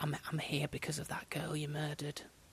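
quiet, hushed whispering. Retelling a detective's words to a suspect: imitating a detective whispering. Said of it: "quietly and rather in hushed tones and whispers went".

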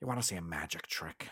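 low, quiet, purring character voice. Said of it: "since I've got my".

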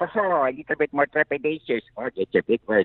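high, shy cartoon voice. Talking about his characters, the speaker demonstrates a timid Luigi voice. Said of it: "He talks like this".

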